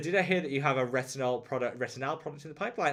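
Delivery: normal talking voice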